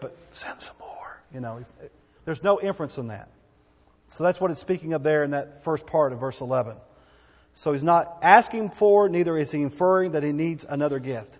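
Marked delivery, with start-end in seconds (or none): 0.0-1.2 slow, soft whisper under the breath. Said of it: "not saying under his breath".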